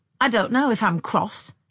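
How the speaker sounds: settled, firm, decisive statement. A woman answers a man who has turned to her, decisively. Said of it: "she said decisively".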